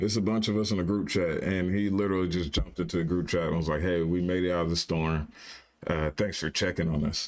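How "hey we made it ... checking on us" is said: mock sarcastic, snarky delivery, pitched low. Retelling a group chat member's message, mock-snarky sarcastic tone. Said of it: "the snarky tone in his voice".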